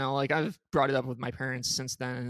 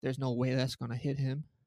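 acted muttering under breath; 4 dB quieter than usual. Retelling a joke about hitting a golfer: retelling a mutter under breath. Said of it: "I'm just muttering under my breath".

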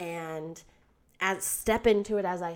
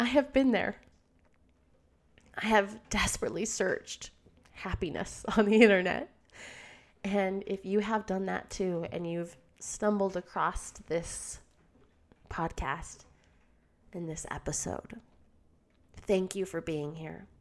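tearful, choked-up, on the verge of tears. Podcast host thanking listeners for being here, tearing up. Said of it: "sorry, I'm tearing up".

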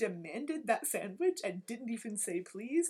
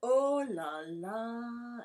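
oh la la with the final la stretched long; 4 dB louder than usual. Retelling a French teacher's phrase: imitating the teacher drawing out the last la. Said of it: "she would really draw out that last la".

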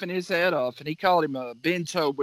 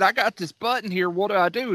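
plain

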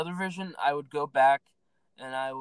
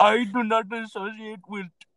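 loud, high put-on Indian accent, child voice; 8 semitones higher, 5 dB louder than usual. Quoting the Indian kid from a Vine: imitating Indian kid from Vine. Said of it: "He's like".

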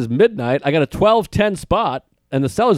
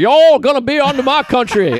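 put-on Louisiana accent, higher pitched; 9 semitones higher, 4 dB louder than usual. Joking about a cajun president who threatens other countries: imitating a cajun guy. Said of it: "a Cajun guy who was like".

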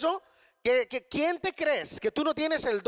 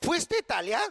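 sarcastic, doubting, mocking, disbelieving tone. Retelling the barber questioning a returning customer, retelling a sarcastic question. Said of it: "le preguntó sarcásticamente al hombre".

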